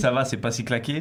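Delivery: plain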